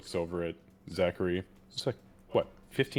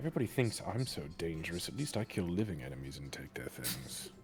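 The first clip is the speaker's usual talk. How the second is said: soft, grumbling muttering under the breath; 3 semitones lower, 7 dB quieter than usual. A player's character walks off, muttering under his breath. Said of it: "under his breath you just hear him say".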